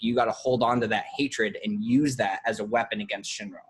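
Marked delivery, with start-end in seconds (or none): none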